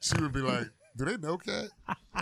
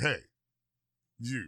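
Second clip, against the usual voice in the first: small, low-set, deep little voice; 3 semitones lower than usual. Retelling how a woman first called out, imitating a deep little voice. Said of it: "Deep little voice".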